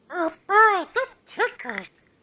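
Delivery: very high, squeaky puppet voice. Showing what other voices one voice can make, doing an Elmo voice. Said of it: "I can do Elmo".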